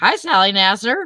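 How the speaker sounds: cheery, happy, upbeat voice. Retelling how the person called answered the phone: retelling a cheery greeting. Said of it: "and like a cheery voice".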